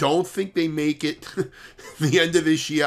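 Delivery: words broken up by giggles, talking through laughter. Giving a market outlook on the Nasdaq, laughing while talking. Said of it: "I'm sorry that I'm laughing".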